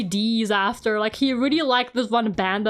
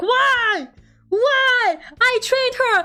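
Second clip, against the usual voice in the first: very high, very slow, dragged-out screaming; 12 semitones higher, 3 dB louder than usual. Retelling someone yelling at a game horse: imitating someone screaming. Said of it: "she was just screaming at the horse".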